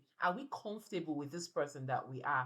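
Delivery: ordinary talk, nothing marked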